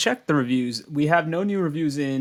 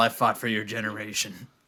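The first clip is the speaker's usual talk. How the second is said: put-on low, grumpy old-man mumble. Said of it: "And then it's mumble, mumble, mumble".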